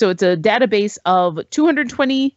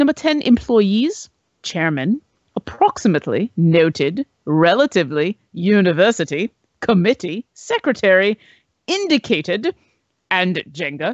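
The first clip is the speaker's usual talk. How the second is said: thickest, exaggerated put-on British accent. Counting down a list for listeners, in an exaggerated british accent. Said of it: "in the most British of accents that I can pull off".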